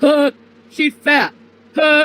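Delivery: very slow, drawn-out, dopey jeering voice. Complaining about a boring channel, the speaker acts out the people on it, mocking stupid people. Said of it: "a bunch of stupid people being like".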